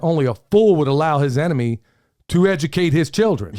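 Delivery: ordinary delivery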